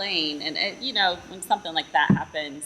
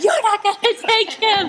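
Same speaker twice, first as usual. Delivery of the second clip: shrill, very high, loud roaring shout; 8 dB louder than usual. Describing going back and forth over a brother, retelling a roar at the enemy. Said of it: "roaring at the enemy and I'd be like".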